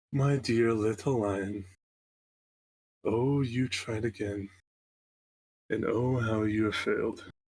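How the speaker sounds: little, tiny, wee voice. Narrating a story where the listener's father lies beaten, in a quiet little tiny voice. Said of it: "this quiet little tiny voice that awfully starts quiet".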